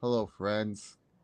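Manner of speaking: low, flat, monotone, lifeless, dying drone. Imitating an announcer's greeting: monotone Jim Nantz voice. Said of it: "he sounds like he's dying".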